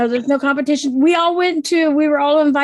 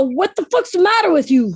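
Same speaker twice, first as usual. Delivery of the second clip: acted Boston way of talking; 3 semitones higher than usual. Explaining her husband is from boston, imitating husband's boston accent. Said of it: "Or he'll go".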